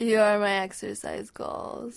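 put-on slurred drunken speech. Coming into Carrie's room as she lies in bed, slurring words drunkenly. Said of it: "You're actually slurring your words".

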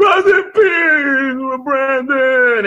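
play-acted very high, tearful crying shout. Retelling a drunk friend yelling at the movie screen, retelling a crying yell. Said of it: "he's yelling at the screen".

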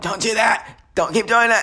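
mock very high-pitched, angry, nagging tone. Imitating a mom getting mad over loud speakers: imitating an angry mom. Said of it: "my mom get mad at me and give me a lecture".

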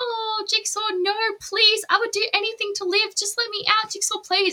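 very high, desperate begging pleading voice. Describing trap victims begging to be let out: mock pleading. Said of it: "the people are like".

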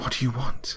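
high, quavering, trembling, frightened voice. Reading a horror story aloud, voicing the frightened narrator: trembling voice. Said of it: "My voice tremored".

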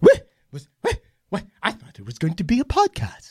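mock regal, queenly voice. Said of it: "she talks like a queen".

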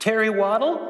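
put-on very high, squeaky pre-adolescent boy's voice. Retelling how a frozen kid answered boys asking his name, very squeaky pre-adolescent voice. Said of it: "with a very squeaky pre-adolescent voice".

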